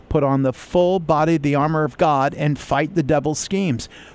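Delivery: ordinary delivery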